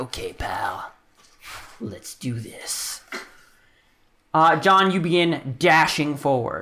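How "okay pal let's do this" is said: slow, hushed, whispered mutter under the breath. Voicing a character slow-walking forward with the group: muttered under his breath. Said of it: "with [name] saying under his breath".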